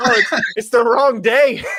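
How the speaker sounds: mock flustered, stumbling, high voice. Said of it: "So she was like".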